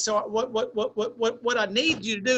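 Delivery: mock stuttering with repeated sounds. Retelling a man's words about a career after basketball: imitating a stutter. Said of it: "I stuttered".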